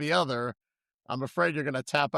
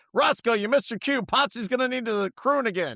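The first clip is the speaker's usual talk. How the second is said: put-on, mean, angry yelled screaming; 7 semitones higher than usual. Imitating an imagined mean trainer screaming at the dog: imitating a trainer screaming. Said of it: "just screaming at Roscoe".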